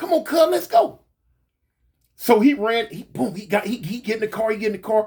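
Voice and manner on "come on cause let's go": high, urgent, raised voice. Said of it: "And I'm like".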